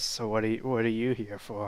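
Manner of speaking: raspy, scratchy fantasy character voice. A game master voices a half-elf questioning the players, raspy voice. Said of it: "kind of raspy voice".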